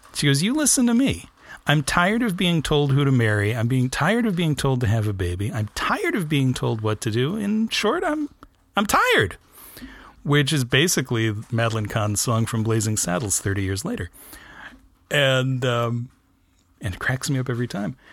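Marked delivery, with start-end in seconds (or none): none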